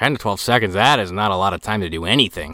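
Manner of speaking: usual speaking voice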